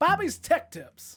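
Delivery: very high, booming, loud put-on voice. Asked to say the name of your tech tips for the listeners, do an Ernie Hudson voice. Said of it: "Can you do it as Ernie Hudson?".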